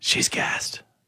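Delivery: soft, hushed, unvoiced whisper.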